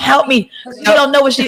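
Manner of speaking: mild, pleading, put-on cry. Retelling the brother-in-law yelling from the back: imitating someone screaming. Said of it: "He's in the back screaming".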